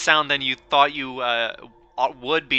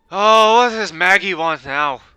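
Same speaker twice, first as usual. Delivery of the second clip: sudden put-on British or Irish accent, loud and high; 6 semitones higher, 8 dB louder than usual. Voicing a character who answers the group, in a British or Irish accent. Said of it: "I am suddenly doing a British or Irish accent".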